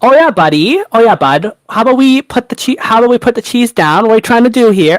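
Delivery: put-on Wisconsin accent. Taking turns trying an accent, the speaker does a Wisconsin accent attempt. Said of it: "That was my best attempt".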